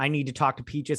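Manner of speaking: ordinary talk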